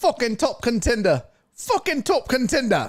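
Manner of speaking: put-on slight British accent. Watching a fight, speaker mimics a fighter's line; slight british accent imitation. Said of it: "a little teeny tiny British accent".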